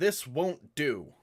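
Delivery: very loud, high-pitched yell from far off. Voicing a character yelling from across the compound: yelling in character. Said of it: "He yells".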